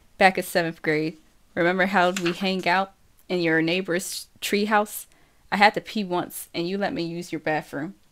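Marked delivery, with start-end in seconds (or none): none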